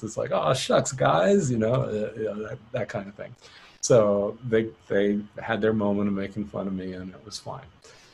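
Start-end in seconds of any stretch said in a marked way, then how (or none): 0.3-1.5 put-on high, slightly creaky child voice. Retelling reacting to being mocked by bandmates: Beaver Cleaver voice. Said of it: "you turn into Beaver Cleaver".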